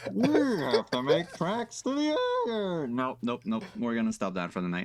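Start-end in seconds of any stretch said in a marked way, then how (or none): 0.1-2.9 put-on villain voice. Shooting at a cop in a game, speaking in best Bane voice. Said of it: "my best Bane voice".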